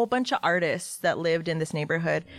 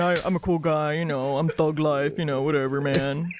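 lower character voice. Asked to do the voice, answering in the same voice but lower. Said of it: "It's the same voice, but lower".

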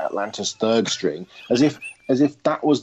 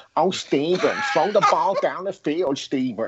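put-on whining New York accent; 5 semitones higher than usual.

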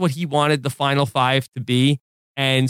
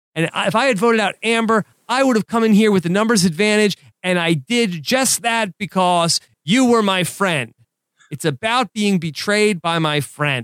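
put-on bitter, betrayed, angry rant, pitched up; 6 semitones higher than usual. Reading aloud what someone said about feeling betrayed, acting out an angry quote. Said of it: "you really add the anger into your voice".

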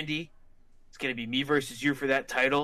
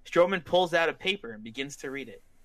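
ordinary talk

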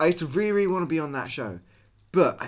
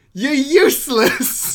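acted out game-show host voice, loud, high yelling; 8 semitones higher, 6 dB louder than usual. Retelling what a game show presenter shouted at kids: imitating a presenter yelling. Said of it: "the presenter went".

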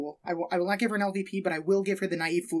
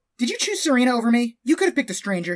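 angry, loud, storming confrontational delivery; 4 semitones higher, 6 dB louder than usual. Reenacting the scene where Blair storms up to her mom, Blair storming up. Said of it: "So Blair storms up and away we go".

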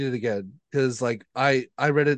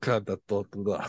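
put-on Russian baritone accent, lower and quieter; 4 semitones lower, 4 dB quieter than usual. Describing how a woman sounded, speaker imitates her, imitating a baritone russian voice. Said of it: "She had like a baritone like Russian voice".

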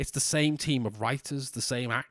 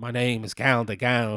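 bad put-on purring diva voice, louder; 5 dB louder than usual. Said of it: "That was a terrible [name]".

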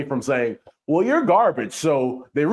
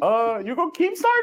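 squeaky, very high-pitched delivery; 12 semitones higher than usual. Retelling what Tone said to a player, imitating Tone's way of talking. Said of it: "I just know how Tone talk, and that's how he talks".

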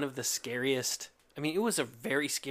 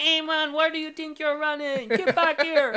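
very high, loud, put-on Jamaican accent; 13 semitones higher, 8 dB louder than usual. Describing characters with Uzis and dreadlocks, acting out their line in a Jamaican accent. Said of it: "Jamaican accents, and they're like".

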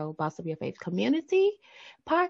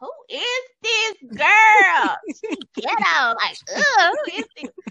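high, judgmental, shocked and disbelieving. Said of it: "And I'm like".

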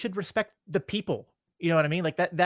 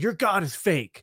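mock yelled, shouted-out jab; 2 semitones higher than usual. Picturing an atheist running up during a prayer, imitating someone yelling. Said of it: "an atheist ran up to me and yelled".

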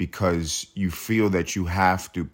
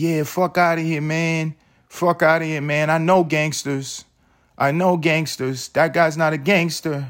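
very high, wavering, shaky tough-guy bluster, acted out; 9 semitones higher, 4 dB louder than usual. Acting out an embarrassed man's rant while everyone stares: imitating a shaky voice. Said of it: "real shaky voice".

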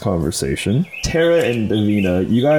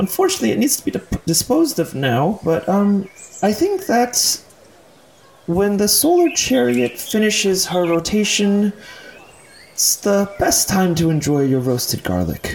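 very high-pitched gnome voice; 11 semitones higher than usual. A gnome manning a roasted garlic stand speaks to you, gnome voice. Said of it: "a gnome, notably less old than Ivan. There's a gnome manning a roasted garlic stand".

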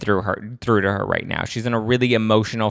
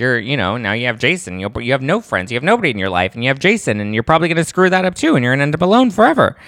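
mock offhand, breezy, nonchalant, swooping pitch; 3 semitones higher, 4 dB louder than usual. Retelling a cutting remark said on a bridge: Ramona's nonchalant casual tone. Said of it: "a really nonchalant kind of casual tone".

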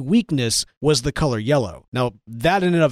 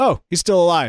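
put-on nonchalant voice, pitched higher; 3 semitones higher than usual. Retelling how Barry walked over to the villain: imitating Barry's nonchalant tone. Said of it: "walked over to him very nonchalantly".

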